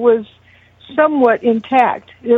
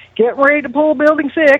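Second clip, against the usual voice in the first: put-on North Carolina accent; 4 semitones higher than usual. Quoting a guy in a video about pulling down a building: imitating a North Carolina accent. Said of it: "a North Carolina sounding accent".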